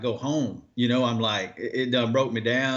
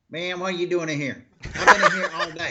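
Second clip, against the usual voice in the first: put-on territorial-sounding voice, higher; 6 semitones higher, 3 dB louder than usual. Imitating a fellow angler guarding his fishing territory: Tommy biffle impression. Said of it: "here's my best Tommy biffle".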